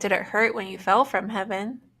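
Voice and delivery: ordinary talk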